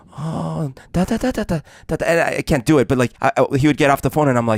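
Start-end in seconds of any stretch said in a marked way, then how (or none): 0.1-1.9 slow, anxious, dramatic, worried-sounding gibberish. Mimicking people whose language the speaker couldn't understand, imitating worried-sounding inflections. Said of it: "their inflections were always very worried sounding".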